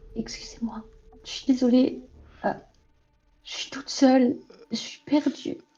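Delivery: tiny, small, breathy, half-whispered voice. In a roleplay scene, speaking in a small little voice unlike the usual one. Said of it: "je vais parler d'une petite voix".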